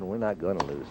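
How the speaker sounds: plain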